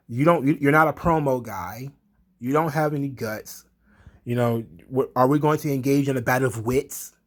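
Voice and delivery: ordinary talk, nothing marked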